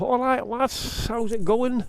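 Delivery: high, slow mock Lancashire accent sliding into Scouse.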